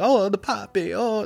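put-on Italian accent. Recalling a Seinfeld episode, quoting the character: Poppy's Italian accent. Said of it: "The Italian accent".

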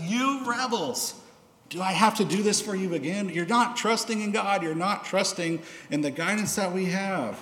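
exasperated, angry tone. Retelling his words to the people coming before him again, acting out frustrated anger. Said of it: "he is so frustrated".

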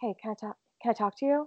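hushed, creepy half-whispered voice. Retelling what a stranger said at the window: imitating a half-whisper. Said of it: "he whispers to me".

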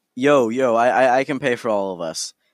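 ordinary talk

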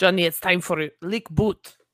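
put-on, imitated Russian accent. Retelling what a russian woman at the window said, imitating a russian accent. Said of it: "That's pretty much how she sounded".

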